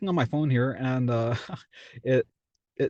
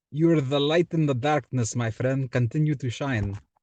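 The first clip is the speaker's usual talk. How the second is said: put-on Greek accent. Speaker does an accent for the viewers: greek accent. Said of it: "I want to do a Greek accent for you guys".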